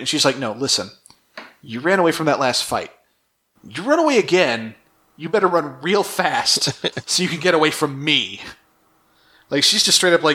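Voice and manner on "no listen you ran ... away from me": put-on, menacing, blunt, threatening tone. Retelling a scene where one character threatens another: imitating a threat. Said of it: "She threatens him".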